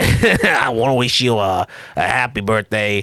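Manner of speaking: slow, drawn-out character voice. Acting out a voice actor's birthday greeting to John: Ernest voice. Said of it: "That wasn't too bad of an Ernest voice".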